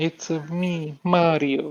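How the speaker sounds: put-on botched, failed Italian accent, pitched high. While speakers argue about pronouncing Mario, one tries a bad Italian accent. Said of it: "you can't even pull an Italian accent".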